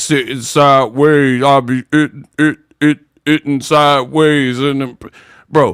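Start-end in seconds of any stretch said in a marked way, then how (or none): 0.0-4.6 imitated chopped and screwed, slowed-down voice. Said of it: "You chopped and screwed".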